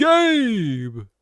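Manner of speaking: put-on announcer voice. Announcing a name as a game would, Smash Bros announcer voice. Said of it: "if you hit it with like the Smash Bros announcer".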